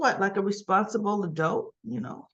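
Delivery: plain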